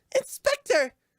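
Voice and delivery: loud, accusing put-on voice.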